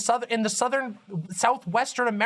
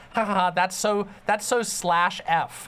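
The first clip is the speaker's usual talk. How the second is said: ordinary delivery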